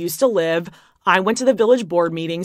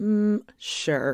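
ordinary delivery

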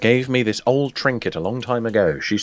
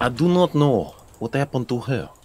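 loose, half-landed, attempted Russian accent; 2 semitones higher than usual. Asked what voice they are using, a player answers in an attempted russian accent. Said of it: "That's Russian".

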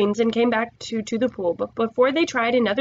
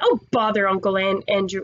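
ordinary delivery, nothing marked

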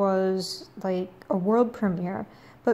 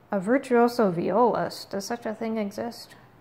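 normal talking voice

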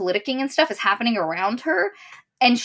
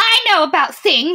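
mocking, sneering, high and loud; 7 semitones higher, 6 dB louder than usual. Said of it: "I'm obviously mocking right now".

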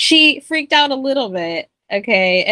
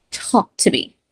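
pushy, aggressive, forceful delivery. Retelling a movie scene where she demands the doll talk: imitating an aggressive demand. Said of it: "she's getting aggressive".

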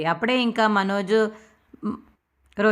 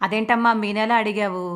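ordinary delivery, nothing marked

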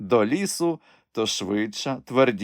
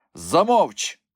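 brusque, rough, high cut-off; 5 semitones higher, 3 dB louder than usual. The bishop rudely cutting off the old woman's answer. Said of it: "брутально обірвав її єпископ".

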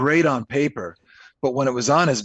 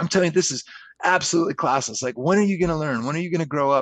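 mock pissed-off, angry scolding rant; 3 semitones higher than usual. Retelling how Bob scolded over the phone: imitating angry Bob. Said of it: "He's pissed".

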